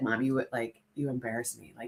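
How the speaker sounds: very soft, hushed, embarrassed voice. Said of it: "she's like".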